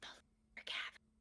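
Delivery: hushed, breathy stage whisper. Retelling own words while walking, describing the caverns: hushed staged whisper. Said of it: "a hushed, like, staged whisper".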